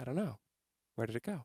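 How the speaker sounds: deadpan, low and very quiet, dead-serious. Retelling how Trish answered about her missing chair, imitating Trish, deadpan serious. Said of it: "she's like deadpan serious".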